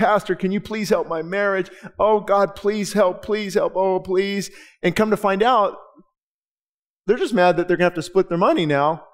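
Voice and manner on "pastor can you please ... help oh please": fake tearful crying voice, much slower. Speaker acts out people crying at the church altar to the pastor; mock crying plea. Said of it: "they're crying".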